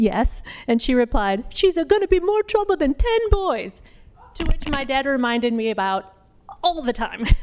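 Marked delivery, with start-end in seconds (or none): 1.5-3.8 very high, fake, bad Italian accent. Daughter retelling an Italian woman's remark to her dad, bad Italian accent. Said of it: "Pardon my bad Italian accent".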